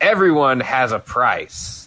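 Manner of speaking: ordinary delivery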